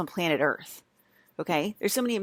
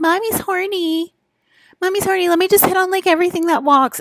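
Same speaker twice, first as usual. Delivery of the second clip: acted airheaded voice, shrill, very high and very loud; 12 semitones higher, 11 dB louder than usual. Mocking people by imitating them: mocking imitation of an idiot mom group. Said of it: "you sound like an idiot mom group".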